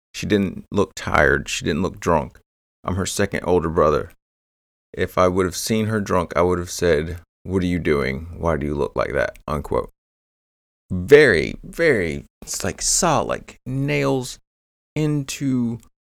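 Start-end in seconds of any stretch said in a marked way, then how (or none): none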